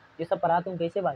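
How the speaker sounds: ordinary talk, nothing marked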